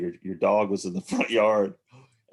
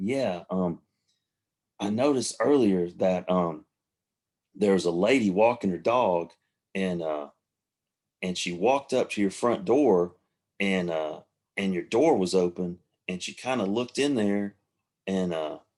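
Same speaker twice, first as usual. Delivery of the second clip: plain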